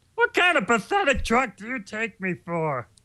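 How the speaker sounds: high cartoon voice, pitched way up and swooping. Answering which voice is the favorite: Barney voice. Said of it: "Which I just did".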